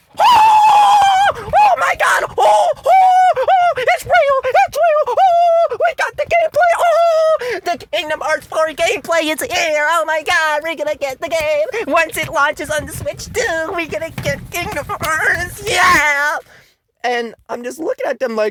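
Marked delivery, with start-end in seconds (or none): 0.2-16.4 put-on, very high, loud, overexcited squealing. Mocking reaction channels losing their minds over a game reveal: imitating overexcited hype reactors. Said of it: "mouth wide open and the goddamn thumbnail going".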